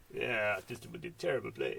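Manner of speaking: bad put-on French accent. Mimicking a scene in the film: terrible french accent. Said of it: "that's a terrible French accent".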